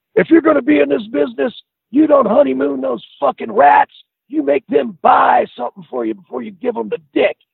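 screaming rant, shrill and very high pitched. Recounting how a man suddenly started screaming: retelling someone screaming. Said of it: "And he started screaming".

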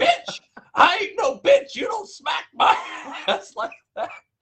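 loud, high, angry squealing outburst. Retelling a guy whose behind a girl smacked, speaker imitates his high squealing voice. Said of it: "He sounds exactly like that high squeal voice".

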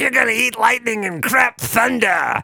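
put-on corner man growl. Recalling an old bit, doing Burgess Meredith as Mick, the Rocky trainer. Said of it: "I did like an impression of Burgess Meredith as Mick, the trainer in Rocky".

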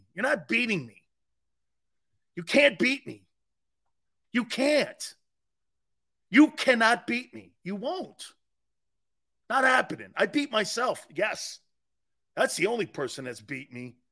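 tearful voice, close to crying. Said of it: "I sound like I'm crying".

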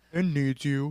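quiet, gloomy, downcast, depressed voice. Retelling how Nate answers Juliet, in his best Eeyore depressed voice. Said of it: "Nate answers in like his best Eeyore depressed voice".

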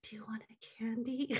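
hushed whisper. A mother showing how she bribes her tantruming youngest, whispering. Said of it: "I can whisper like".

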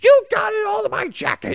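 put-on very loud, very high, shrill, berating drunken yell. Describing a Bruins fan berating a man eating chicken tenders, imitating a fan yelling. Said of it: "just yelling".

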